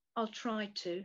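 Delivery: plain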